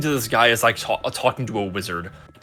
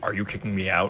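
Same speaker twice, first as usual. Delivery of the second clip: put-on very serious voice, lower and quieter; 4 semitones lower, 9 dB quieter than usual. Retelling a customer's reply to a joke: imitating someone speaking very seriously. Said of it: "got, like, really serious and said".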